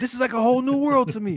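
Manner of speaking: excited, freaked-out disbelief. Retelling a colorblind man seeing red for the first time: imitating someone freaking out. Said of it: "he's freaking out".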